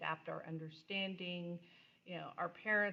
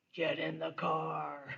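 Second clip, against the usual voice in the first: loud, sweetness dropped, "car" drawn out; 6 dB louder than usual. Describing a mom calling everyone to the car, Batman voice. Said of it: "here comes the Batman voice".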